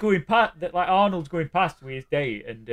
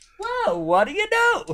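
very high, mock amazed voice. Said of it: "he's like".

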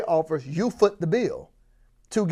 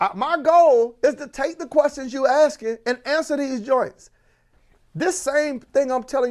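raised, lifted, pitched-up voice; 8 semitones higher, 3 dB louder than usual. Teaching listeners who should be taking notes, answering their questions; raised voice. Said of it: "why am I raising my voice?".

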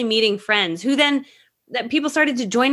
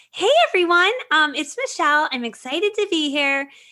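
put-on sweet airheady voice, pitched up, fake-nice; 6 semitones higher than usual. An introvert shows her uncomfortable alter-ego voice for introductions: airheady fake-nice voice. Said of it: "sounds like this".

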